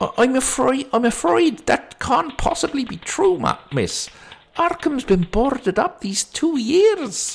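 put-on accent gradually drifting and slipping into Scottish. Voicing a character replying to a young woman: drifting into scottish accent. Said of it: "He's going Scottish now".

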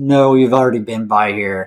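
mock level, deadpan, flat monotone. Recounting a scene where Kristen answers the woman outside, Kristen's flat monotone reply. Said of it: "like very monotone as well".

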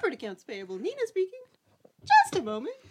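very high goofy voice that swoops up and down. Listing favorite movies, the speaker quotes a phone-answering scene in Nina's voice. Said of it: "Now who's doing the Jar Jar voice?".

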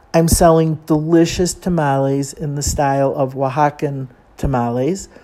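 ordinary talk

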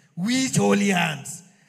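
loud, slow, demanding voice of God.

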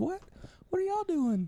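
put-on young lady's very high voice. Retelling how a young lady came over during a sound check, imitating her voice. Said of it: "'Cause that's exactly what she sounds like".

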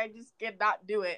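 mock crying, soft, slow, tearful and begging. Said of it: "I remember you crying".

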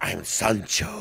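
put-on breathy, hushed, soft, sexy accented voice. Retelling meeting Sancho as he introduces himself, in Sancho's sexy accented voice. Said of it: "amazingly sexy voice with the accent".

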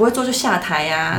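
ordinary talk

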